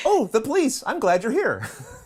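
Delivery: very high, gushing, delighted voice. Recounting a woman's response after being grilled, acting out her reply: mock-delighted reply.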